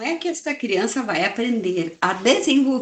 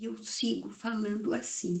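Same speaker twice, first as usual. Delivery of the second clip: very quiet, hushed voice dwindling to near nothing; 14 dB quieter than usual. Showing how they quiet a noisy class: lowering the voice. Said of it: "Eu vou diminuindo o meu tom de voz".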